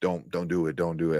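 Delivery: play-acted tearful, crying, begging voice. Retelling a scene where a character cries and begs: imitating Kathryn Hahn crying. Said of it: "is just crying, like".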